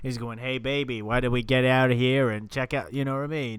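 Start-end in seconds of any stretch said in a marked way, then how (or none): 0.4-2.9 slick, smooth, suave charmer's voice. Retelling a Simpsons scene where a potion turns someone smooth: smooth Professor Frink voice. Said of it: "turns him into, like, Mister Smooth? He's going".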